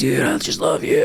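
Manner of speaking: rough, raspy, creaky voice throughout. Recalling a weekend, a man grabs the speaker and speaks: imitating Brian Pitcher's raspy voice. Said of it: "He does it in his raspy voice".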